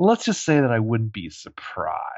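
put-on sneering tone. Retelling a character's answer to a cop: imitating a sneer. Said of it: "little sneer".

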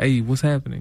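put-on New York accent. Describing how people talk in New York, in a New York accent. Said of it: "everybody talks like".

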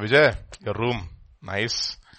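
play-acted, slow, dry, obviously sarcastic tone. Retelling what Shibu said about the speaker's room: imitating Shibu being sarcastic. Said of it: "Sarcastically, obvious, of course".

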